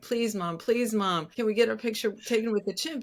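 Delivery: insistent, begging, pleading voice. Retelling how they begged their mom at a state fair: imitating own begging. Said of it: "I begged my mom, begged and begged".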